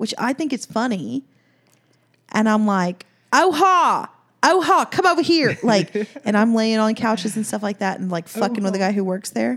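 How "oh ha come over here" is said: put-on loud, drawn-out country-accent holler. Describing his bit across a showroom, yelling in a put-on country accent. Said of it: "I talk in a country accent".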